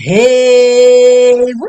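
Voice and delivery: overly loud. Opening the show with a greeting to everyone, too loud. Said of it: "oh, that was too loud".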